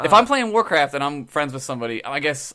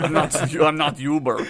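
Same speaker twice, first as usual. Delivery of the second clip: imitated Russian accent. Retelling what a taxi driver said to a passenger: imitating a Russian taxi driver. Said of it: "like, Russian guy one time".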